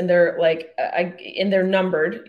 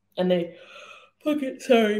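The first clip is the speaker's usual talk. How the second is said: words spoken through a yawn; 3 semitones higher than usual. After full days of filming, talking on a podcast while yawning. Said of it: "I'm yawning into the podcast".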